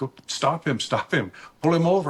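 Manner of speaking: imitated yell. Retelling being yelled at to stop a lowrider: imitating someone yelling. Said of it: "Bustamante is yelling at me".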